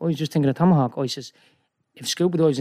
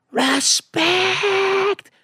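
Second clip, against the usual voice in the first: acted, very high, shrill screaming shriek. Retelling what Ken said at the beach, imitating Ken screaming.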